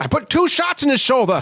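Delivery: deliberately bad put-on voice, pitched very high. Quoting a line from the movie: terrible Donald Pleasence impression. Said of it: "That's my terrible Donald Pleasance".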